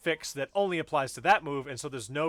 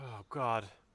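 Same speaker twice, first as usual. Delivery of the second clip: distressed, worked-up, really upset outburst; 4 semitones lower, 6 dB quieter than usual. Complaining about complicated special move inputs, sounding really upset. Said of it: "You sound really upset right now".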